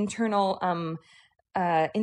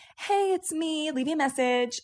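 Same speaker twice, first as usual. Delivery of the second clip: put-on high, slow, girly voice; 6 semitones higher than usual. Retelling a radio show's fake voicemail greeting: imitating a girl's voice. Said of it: "sounding like a girl".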